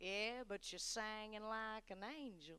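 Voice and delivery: put-on hushed, very quiet, heavy South Carolina accent. Retelling what a man in the back shouted: thick south carolina accent. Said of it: "with a very thick South Carolina accent".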